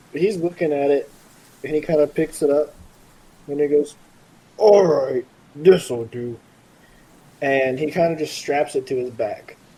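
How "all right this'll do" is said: slow, loud, dopey, dumb-sounding voice. Voicing Kirk, who isn't that smart, picking up a hammer: voicing Kirk, who isn't smart. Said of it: "Why did you say it like that?".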